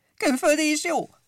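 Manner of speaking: shrill whooping cry at a very high pitch. Pompom replies to Gombóc Artúr, whooping. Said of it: "Rikkantott a Pompom".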